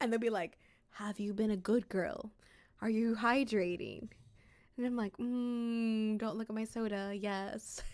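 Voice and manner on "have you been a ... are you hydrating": low, deep put-on voice, lower. Imitating a voice from TikToks on the speaker's For You page, deep voice. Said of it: "there'll be a deep voice".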